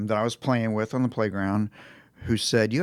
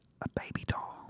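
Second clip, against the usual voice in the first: tiny, very quiet secret whisper, barely there. Retelling asking Santa for a Christmas present: imitating a quiet whisper. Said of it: "I whispered in the quietest voice".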